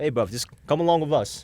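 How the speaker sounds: put-on heavy, high Irish accent. Retelling what an Irish guy said to the speaker: imitating a heavy Irish accent. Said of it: "in his super heavy Irish accent".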